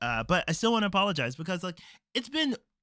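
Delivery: rushed, very fast speech.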